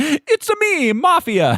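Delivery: very high, swooping, swinging cartoon Italian accent. Speakers joke about a character's over-the-top Italian accent: Mario voice. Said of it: "It's like Mario and Luigi's voice".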